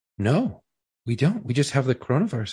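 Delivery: play-acted level, flat, matter-of-fact deadpan delivery. Retelling what the lady at checkout answered: imitating a deadpan reply. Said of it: "fucking straight faced was like".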